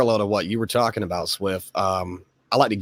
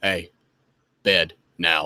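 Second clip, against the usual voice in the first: commanding dad voice, much slower; 3 semitones lower than usual. A father tells how he sends everyone to bed; dad voice. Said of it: "dad voice is real".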